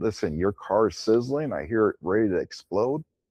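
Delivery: play-acted no-nonsense, stern, firm voice. Recounting urging a woman to get out of her car: retelling in a stern voice. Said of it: "in a stern voice saying".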